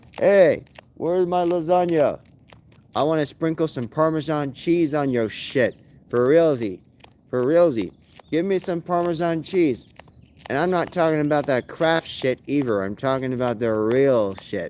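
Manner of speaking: normal talking voice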